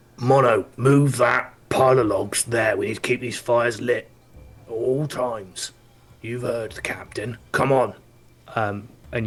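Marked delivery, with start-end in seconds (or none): 0.2-7.9 rough, gruff, raised barking commanding voice. Narrating a scene, the speaker voices a figure heard ordering mono; gruff voice. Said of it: "you hear like a gruff voice".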